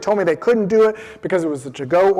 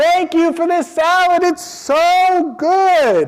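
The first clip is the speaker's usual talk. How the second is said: very high shout, drawn out; 11 semitones higher than usual. Retelling thanking the salad makers in the back: retelling a shout. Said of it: "shout into the back".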